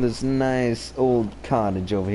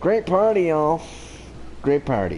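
sarcastic tone, meaning the opposite; 4 semitones higher than usual. Commenting while playing a game, sarcastic. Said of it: "I'm being sarcastic if you haven't noticed".

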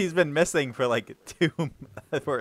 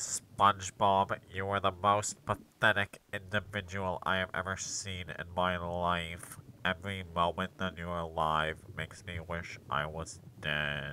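bad, low, drawn-out cartoon voice; 6 semitones lower, 9 dB quieter than usual. Doing an on-the-spot impersonation on request: Squidward impression. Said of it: "that was Squidward".

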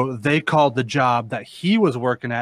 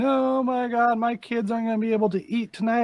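play-acted sobbing, high, tearful and weepy; 11 semitones higher, 3 dB quieter than usual. Retelling how a woman reacted after he refused to take her item: imitating someone crying. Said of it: "she starts crying".

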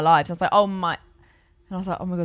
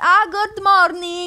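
put-on English words in very high, loud Italian accent; 12 semitones higher, 6 dB louder than usual. Retelling answering a man's Italian greeting, Italian accent on English words. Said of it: "I did the accent, but not the words".

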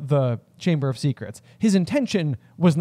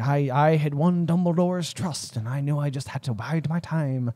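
put-on leprechaun-like Irish accent; 3 dB quieter than usual. Riffing on a villain reveal, the speaker voices a Hagrid monologue slipping into leprechaun. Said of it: "I went very leprechaun".

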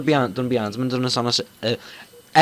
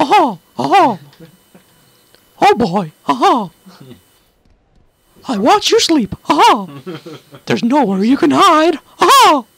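squeaky high voice with big swooping pitch changes; 11 semitones higher, 6 dB louder than usual. Playing a game with friends, showing what a Mickey Mouse voice is like. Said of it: "Mickey Mouse is like".

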